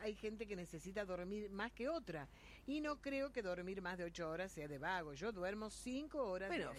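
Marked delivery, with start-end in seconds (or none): none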